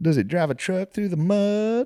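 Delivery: put-on Southern accent, very high, words drawn out. Retelling a girl's songs to a friend, in a southern accent. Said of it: "It sounds like I'm doing a southern accent".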